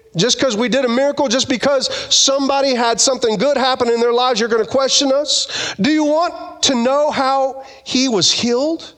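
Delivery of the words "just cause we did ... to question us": ordinary delivery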